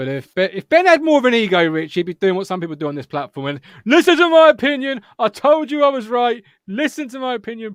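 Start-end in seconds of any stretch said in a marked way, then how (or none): 3.9-7.7 put-on high, loud, egotistical pundit bluster. Mocking egotistical pundits on the platform: imitating a loud egotistical pundit. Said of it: "You gotta shout loud, didn't you?".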